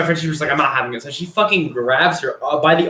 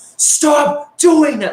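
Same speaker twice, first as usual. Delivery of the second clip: mock very high, shrill, really loud scream; 11 semitones higher, 4 dB louder than usual. Retelling what a woman said on opening the door, imitating a really loud shout. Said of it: "Like in a really loud ass voice".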